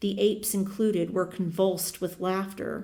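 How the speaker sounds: plain reading voice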